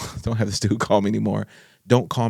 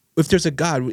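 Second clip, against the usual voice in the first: put-on furious, raging rant, high pitched; 6 semitones higher than usual. Retelling what an enraged father asked on the phone: imitating someone raging. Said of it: "he was just raging".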